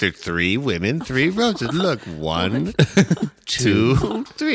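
put-on slow, deliberate children's-show style voice. Mocking a rose ceremony, counting roses: Sesame Street counting voice. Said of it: "It's like Sesame Street".

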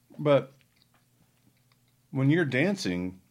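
speaking with mouth full. Speaking mid-conversation while eating, talking while chewing. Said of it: "sorry, I'm chewing".

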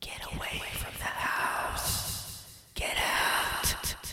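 eerie, breathy, whispered ghost voice. Joking about what could be added in post-production: ghostly voice. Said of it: "add in a ghostly voice post-production and be like".

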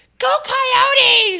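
put-on bubbly cheer, high, loud and jolly. Retelling a stranger's greeting about a shirt: imitating a jolly, happy woman. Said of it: "all jolly and happy and talking to everyone".

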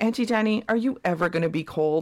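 put-on very serious tone. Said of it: "being so serious".

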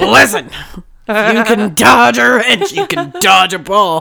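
slow, drawn-out, deliberate delivery. Describing sounding like this on painkillers: Rip Torn from Dodgeball voice. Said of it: "I sound like fucking Rip Torn from Dodgeball".

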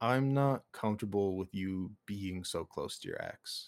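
ordinary delivery

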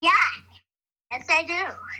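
spooky, eerie, soft whisper. Asked for wise words, Baby Yoda answers the group: spooky Baby Yoda voice. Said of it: "Who's doing that's really spooky".

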